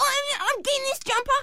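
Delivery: put-on very high kid voice.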